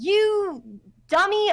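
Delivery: very high, loud, shrill yell. Recapping last session, imitating Amiko's dad yelling. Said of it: "He was yelling, like".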